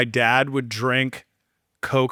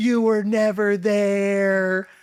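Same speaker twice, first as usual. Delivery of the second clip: put-on child scream, much higher pitch; 7 semitones higher than usual. Retelling a drunk kid screaming at his dad, imitating a kid screaming. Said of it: "this kid is screaming at his dad".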